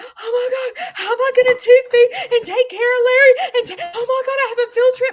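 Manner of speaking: very high, loud, frantic panicked voice. Retelling her reaction to hearing about tube feeding: imitating her own panic. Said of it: "I am in panic going".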